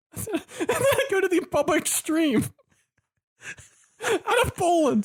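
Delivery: very high, squeaky, tearful, crying-with-laughter speech. Reading out the next matchup from a paper, laughing to tears while talking. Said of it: "I'm crying".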